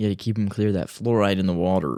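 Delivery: put-on Southern accent. Joking about fluoride in the water: put-on Southern Trump supporter accent. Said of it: "the Southern Trump supporter accent".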